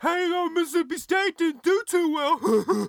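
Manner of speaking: put-on very high, shrill, obnoxious little-kid voice. Telling a school story, the speaker quotes an obnoxious kid: imitating a little kid's voice. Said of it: "this is his exact voice".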